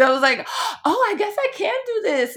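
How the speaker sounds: high, loud, excited, amazed exclamation.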